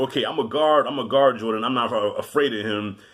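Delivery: plain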